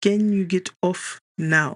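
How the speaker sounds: gritting out the words. Narrator reads Michelle's line to Winnie, who won't move, through gritted teeth. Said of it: "I grit out".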